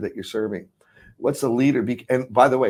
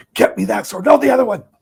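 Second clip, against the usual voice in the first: very high, loud, high-pitched shouting; 11 semitones higher, 6 dB louder than usual. Acting out David yelling at his armor bearer for a sword: imitating David yelling. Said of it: "he yells at his armor bearer".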